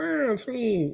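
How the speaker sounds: very high, cartoonish mushroom character voice. Describing a Super Nintendo World clip, doing the Toad voice. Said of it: "it's hard to do Toad. He's like".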